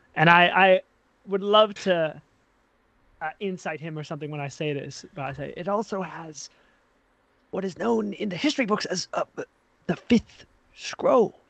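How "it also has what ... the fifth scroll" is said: secretive, hushed, put-on whisper with voice kept down. Playing a character who whispers secrets into another's ear: whispering in character. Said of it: "I whisper to him".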